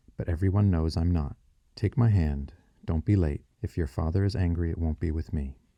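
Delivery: ordinary delivery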